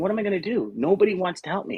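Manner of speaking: weepy, crying voice. Retelling sitting here broke and unable to afford courses, imitating own past crying. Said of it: "just crying, going".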